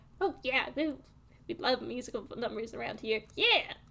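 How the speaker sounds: little soft squeaky voices, chattering and perking up. Narrator voicing animals asked about musical numbers, squeaky voices perking up. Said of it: "several like squeaky voices just perk up".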